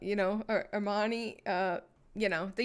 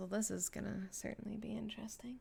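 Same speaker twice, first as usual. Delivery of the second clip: muttering quietly under the breath, quieter; 12 dB quieter than usual. Voicing a character riding up in the elevator: muttered under his breath. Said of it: "kind of under his breath".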